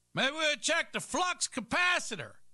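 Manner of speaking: high-pitched, joking, mock know-it-all voice.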